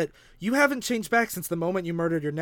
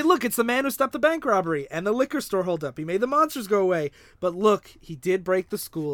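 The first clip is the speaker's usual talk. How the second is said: ordinary talk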